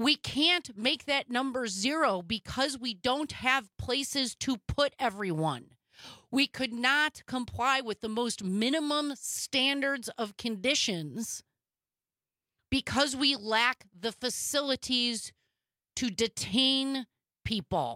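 very slow, slowed-down, drawn-out speech.

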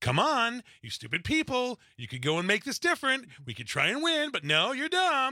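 high, belittling, mocking, condescending tone. Describing a man who sounds condescending even advising his own people, mock-condescending. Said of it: "The most condescending voice I have".

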